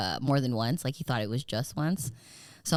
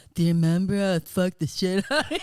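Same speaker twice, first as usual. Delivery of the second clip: mock slurred speech, higher and louder; 5 semitones higher, 5 dB louder than usual. Retelling what a drunk friend said on the phone: imitating drunk slurring. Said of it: "'cause he was slurring".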